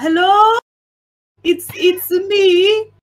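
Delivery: put-on Italian accent. A player's french character does an italian impression to throw everyone off: fake italian accent. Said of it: "French guy doing Italian impression".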